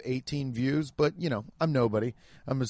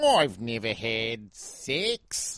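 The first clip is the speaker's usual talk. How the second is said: attempted Australian accent; 2 semitones lower than usual. Showing the only thing they can say in an australian accent. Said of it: "That's the only thing I can say in an Australian accent".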